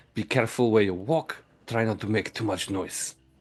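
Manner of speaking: loud, forceful stage whisper. Delgan warns the others to stay careful and quiet, in a loud whisper. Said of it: "in a loud whisper".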